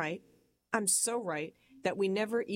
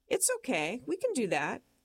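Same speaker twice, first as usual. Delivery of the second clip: put-on cool, unbothered, calm little sing-song voice; 5 semitones higher than usual. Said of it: "that calm little stupid voice".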